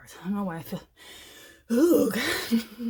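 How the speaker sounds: breathless, very loud, swooping exclamation. Pausing while opening advice cards, sounding out of breath. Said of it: "I feel so out of breath".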